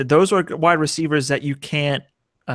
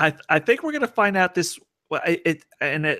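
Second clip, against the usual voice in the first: stammered, scattered, halting fragments with false starts; 3 semitones higher, 3 dB quieter than usual. Discussing whether a benched player is back, stuttering. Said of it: "I'm stuttering".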